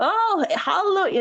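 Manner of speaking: put-on thick Tennessee accent. Retelling an interview, the speaker imitates Honky Tonk's reply in his thick Tennessee accent. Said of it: "in that really thick, like Tennessee accent of his".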